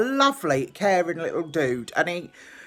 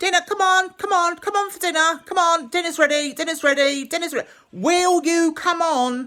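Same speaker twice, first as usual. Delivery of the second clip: mock very high-pitched screaming, over and over; 11 semitones higher than usual. Retelling calling someone to dinner, retelling own screaming. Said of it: "I'm screaming at him like that".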